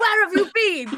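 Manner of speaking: very high, loud, motherly scolding yell. Retelling how a cat greeted a late return: imitating a cat yelling like a mother. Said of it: "she would yell at me like a mother".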